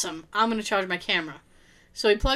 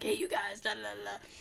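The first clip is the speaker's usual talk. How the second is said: barely-there, very quiet half-whisper; 11 dB quieter than usual. Retelling talking into a phone in a library: imitating own half-whisper. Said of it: "and then I'm whispering into my phone".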